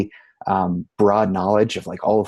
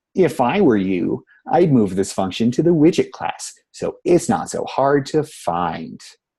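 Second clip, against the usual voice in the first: pompous, condescending, self-important know-it-all tone; 2 semitones higher than usual. Giving a not-so-great example of advice, in a pompous asshole voice. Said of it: "let me get my, my pompous asshole voice on".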